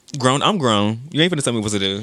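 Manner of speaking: plain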